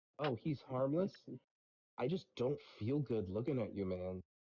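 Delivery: normal talking voice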